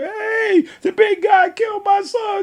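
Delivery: put-on, very high, drawn-out screaming. Telling a story about a brother's football game, imitating a parent screaming. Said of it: "the parent on the other side screaming".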